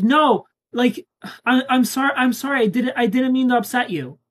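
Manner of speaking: high, stammering, pleading, begging tone. Retelling how the other person responds once pushed away, imitating a pleading apology. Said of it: "And then you're like".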